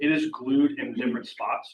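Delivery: ordinary talk, nothing marked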